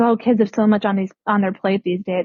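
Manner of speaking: plain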